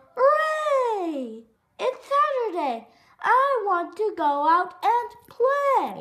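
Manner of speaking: very loud, high, drawn-out yelling. Froggy wakes up on saturday and yells out: yelling. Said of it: "Froggy woke up and yelled".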